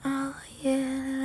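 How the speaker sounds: put-on light, soft voice. Showing how some people lighten their voice: imitating a light, soft voice. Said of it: "often people will lighten their voice".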